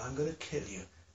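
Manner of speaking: deepest male voice, very quiet and hushed. Retelling a woman's threat in a house: imitating the deepest man's voice. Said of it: "she spoke to me with the deepest man's voice".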